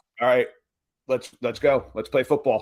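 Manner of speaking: ordinary delivery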